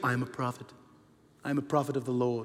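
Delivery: mock prophet monotone. Speaker imitates how self-proclaimed prophets talk: monotone, slightly higher prophet voice. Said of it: "They always speak like that, monotone, a little bit higher".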